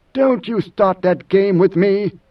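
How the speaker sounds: through clenched teeth. Idaho answers Mineo: through clenched teeth. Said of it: "spoke through clenched teeth".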